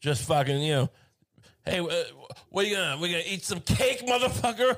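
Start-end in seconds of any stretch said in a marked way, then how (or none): 1.6-4.8 pretend shouting, higher. Acting out a taunt at Slovenians for a joke: mock yelling. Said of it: "I'm gonna yell".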